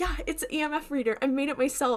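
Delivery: excited, eager, proud boasting tone. Retelling a character showing off a homemade gadget: imitating someone excited. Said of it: "he's all excited about it".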